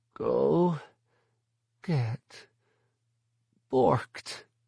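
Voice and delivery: small, pained, high croaking voice. Questioned by Kytus, Myrta finally answers in a small, pained croak. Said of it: "a small, pained voice croaked".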